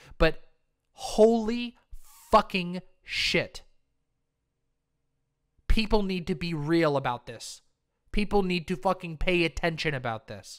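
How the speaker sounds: a little bit angry and frustrated. Speaking about 170,000 dead in the United States, a little bit angry. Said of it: "I'm sorry if I'm a little bit angry".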